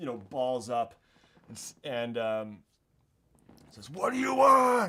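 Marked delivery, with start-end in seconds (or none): 3.9-4.9 shrill cry of distress, very high, very loud. Voicing a beaten man on his knees: crying out. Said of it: "He's crying out".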